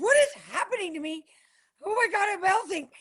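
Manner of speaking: very high, melting, swooning gush. Retelling being pulled in by a man, imitating herself swooning. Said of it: "he pulled me in and I was like".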